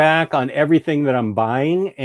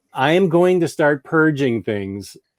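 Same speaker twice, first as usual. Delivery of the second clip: plain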